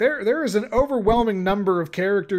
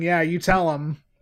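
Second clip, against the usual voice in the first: plain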